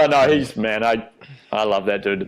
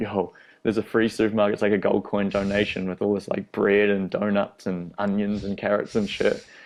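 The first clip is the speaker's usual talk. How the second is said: normal talking voice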